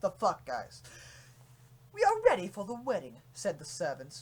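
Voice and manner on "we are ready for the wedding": put-on British servant's accent. Reading a silly fan story aloud to friends: put-on british accent. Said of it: "still doing it".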